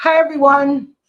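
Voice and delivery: talking with mouth full. Greeting everyone at the start while still eating, talking with mouth full. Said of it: "Sorry, I got my mouth full".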